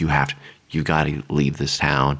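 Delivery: quiet mutter, under the breath. Pitching a horror scene as a bartender warning a visitor: muttered under his breath. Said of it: "maybe under his breath".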